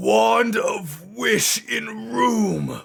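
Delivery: very loud, shrill, rough, high-pitched bellow. Voicing a character who yells a lure through the door: yelling very loudly. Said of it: "he yells very loudly".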